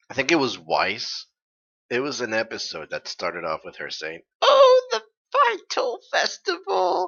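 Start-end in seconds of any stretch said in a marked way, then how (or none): 4.4-7.1 put-on very high, slow, creaky old-lady voice. Retelling how an episode began, the speaker voices Weiss as an old lady. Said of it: "making her sound like an old lady".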